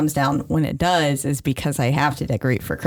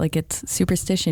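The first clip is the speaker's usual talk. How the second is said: ordinary talk, nothing marked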